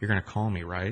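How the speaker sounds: in a whisper. Retelling a hug, the speaker quotes a woman speaking right against their ear: whispering. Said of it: "and she whispers".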